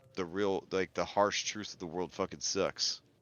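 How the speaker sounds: normal talking voice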